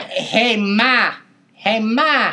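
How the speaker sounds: exaggerated put-on New York accent. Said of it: "that famous New York accent".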